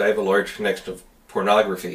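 usual speaking voice

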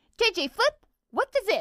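very high-pitched character voice. Asked for a character impression, the speaker quotes a line in Finn voice. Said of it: "this is Finn".

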